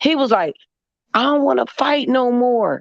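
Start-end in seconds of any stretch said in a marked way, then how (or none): 1.1-2.8 mock scared pleading, higher pitch. Retelling what a man said behind a hotel door: imitating a scared man pleading.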